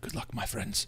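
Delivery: soft, hushed whisper. Voicing Ismark answering the party's farewell as he moves away: whispering back. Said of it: "He whispers back".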